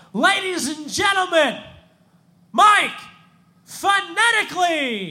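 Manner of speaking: very high, showy, drawn-out stage MC announcer voice. Retelling how an MC brought the speaker on stage: imitating an MC's stage introduction. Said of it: "he would bring me up, he's like".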